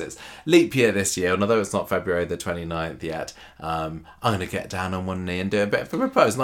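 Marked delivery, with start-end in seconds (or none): none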